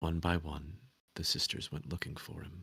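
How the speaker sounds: put-on hushed, confiding, gossipy old woman's voice. Voicing a character making tea for a guest: quiet old gossipy lady voice. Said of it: "she kind of quietly, like, in that, that old gossipy lady kind of way".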